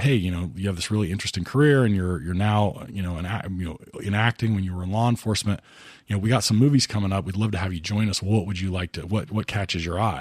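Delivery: ordinary delivery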